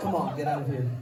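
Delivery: teasing, playful put-on meanness. Staging a bit for the crowd, mocking a friend in the front row: mock mean taunt. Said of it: "that mean thing I say".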